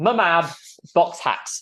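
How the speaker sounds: British accent and pronunciation. Reading out a commenter's name, in a British accent. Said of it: "I'll say it in my British way".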